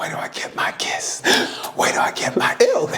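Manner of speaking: breathy, close, repeated whisper. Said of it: "he kept whispering".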